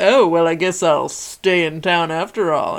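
put-on movie cowboy voice. Retelling a movie scene, imitating John Wayne. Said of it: "he's kinda like".

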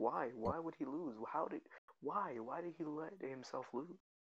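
angry, upset, exasperated outburst. Retelling a reaction to a fighter losing: retelling own mad outburst. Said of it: "I was just mad".

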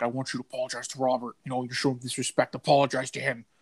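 put-on grave, stern, no-nonsense serious tone. Retelling a demand for an apology to a doll: imitating someone getting serious. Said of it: "got all serious".

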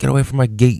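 acted-out, high-pitched mean yelling. Describing being the neighborhood's mean uncle to the kids, retelling a yell. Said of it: "the mean uncle who like yells".

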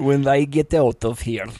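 clumsy, bad, put-on Russian accent. Acting out a Russian woman's line, in a put-on Russian accent. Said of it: "What's a Russian accent?".

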